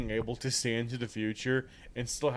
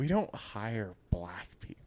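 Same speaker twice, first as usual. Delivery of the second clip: put-on whispered voice; 5 dB quieter than usual. Retelling a story where a clothing store manager whispers to Chelsea, retold whisper. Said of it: "She just whispered to Chelsea".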